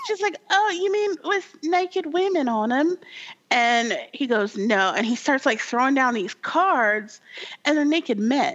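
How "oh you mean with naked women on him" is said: very high-pitched put-on British accent. Retelling a woman's reply during a card game, in a British accent. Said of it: "they're British".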